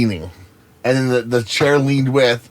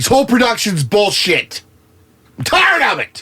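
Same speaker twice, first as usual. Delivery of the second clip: upset shouting, pitched way up, shrill and swooping; 9 semitones higher than usual. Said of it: "Why are you yelling?".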